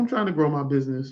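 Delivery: rushed, fast, rattled-off, run-together phrasing. Imitating how people say their business plans: imitating people saying it fast. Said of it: "they say it so fast".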